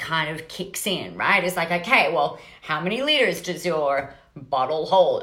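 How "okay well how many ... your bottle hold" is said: put-on slipping into an American accent. Speaker acting out a shopper asking about a bottle, American accent. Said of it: "I don't know why I'm talking in American accent".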